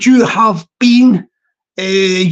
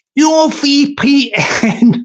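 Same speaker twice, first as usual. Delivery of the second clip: very slow, words broken up by laughter; 2 semitones higher than usual. Mocking people who trust their VPN: laughing while talking. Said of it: "Sorry for laughing about this".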